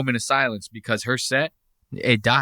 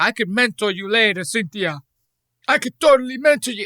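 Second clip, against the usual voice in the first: put-on Russian accent, vampire-like, pitched up; 8 semitones higher than usual. Mocking a comic's line in his put-on Russian accent: imitating a put-on Russian accent. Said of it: "he's supposed to be Russian".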